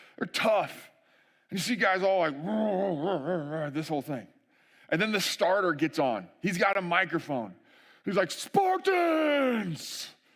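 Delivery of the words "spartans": very high, super dramatic, overhyped announcer call. Retelling how the race starter opens on the microphone: imitating a super overhyped dramatic announcer. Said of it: "really dramatic, like, super overhyped".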